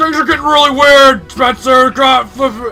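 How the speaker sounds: put-on very loud, high, old-timey field reporter voice. Voicing the internet correspondent reporting from the panel: imagined voice of Epidemic. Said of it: "That's what I imagine Epidemic sounds like".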